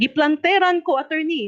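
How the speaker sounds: high-pitched shouting out.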